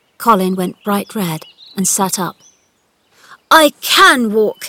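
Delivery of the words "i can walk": defiant, angry, loud shouting. Narrator reads Colin answering Ben, who called him a boy who can't walk; shouted. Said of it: "he shouted".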